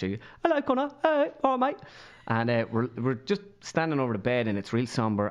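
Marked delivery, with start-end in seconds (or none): 0.0-1.8 put-on posh English accent, pitched higher. Retelling how a ten-year-old English cousin spoke: imitating a posh English accent. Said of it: "got this really posh".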